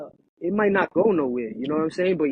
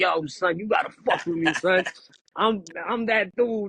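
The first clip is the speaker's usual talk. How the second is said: put-on pushy, belligerent, drunken-sounding boastful delivery. Retelling waking a man with a 2 a.m. call while drunk, retelling belligerent drunk talk. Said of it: "And I'm like belligerent".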